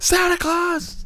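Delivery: mock excitement, high pitch. Imitating Elf to picture getting excited over small things: excited Elf voice. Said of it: "be like Elf and Elf".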